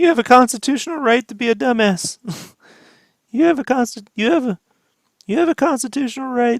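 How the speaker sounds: very high-pitched, cracking, stammering voice. Recalling a Rick and Morty episode, quoting its line in a Morty voice. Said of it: "you're a little too good at Morty".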